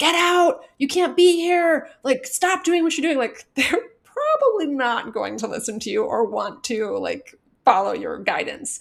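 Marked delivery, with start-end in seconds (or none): 0.0-3.2 high-pitched screaming. Explaining how to treat a frightened kid, speaker acts out screaming at them. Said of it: "screaming at them like".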